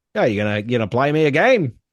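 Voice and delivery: put-on Liverpool Cockney accent. Retelling how everyone in the bar talked to him, cockney accent. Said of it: "very Liverpool, very Cockney".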